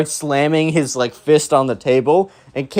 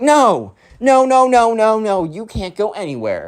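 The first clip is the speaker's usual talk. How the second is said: put-on insistent, high, swooping, drawn-out shout; 7 semitones higher than usual. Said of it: "why are you shouting".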